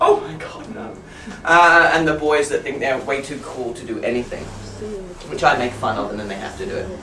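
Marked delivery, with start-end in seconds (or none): 0.0-0.9 put-on embarrassed, high, whispered girly voice. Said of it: "the girls that are really like".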